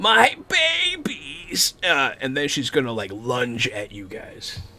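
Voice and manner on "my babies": very high, shrieking scream. Storyteller voicing a giant creature as it drops a body and turns on the players: screaming. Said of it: "like she starts screaming".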